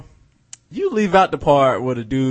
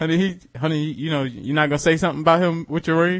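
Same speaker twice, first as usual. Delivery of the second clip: plain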